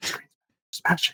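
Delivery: whispered into the mic. A speaker suggesting an episode intro demonstrates it; whispering into the mic. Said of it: "do like the whispers into the mic".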